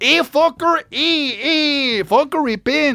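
slow street-slang drawl, "hey" stretched out.

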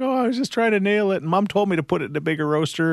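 put-on high-pitched, flustered, embarrassed voice.

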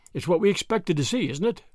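ordinary delivery

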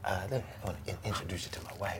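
put-on soft, low voice. Acting out a man introducing his wife: soft midnight-grooves voice. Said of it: "you get soft with the voice".

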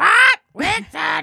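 high mock character voice. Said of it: "have Igor back and have".

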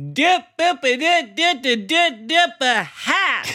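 put-on high, loud, hollered Southern accent. Retelling an airport stranger's call: imitating a shout in a Southern accent. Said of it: "this lady shouted from thirty feet away".

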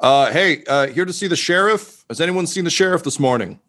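booming, bellowing voice. Game master voicing someone calling for the sheriff in the morning, booming, bellowing voice. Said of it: "a booming, bellowing voice saying".

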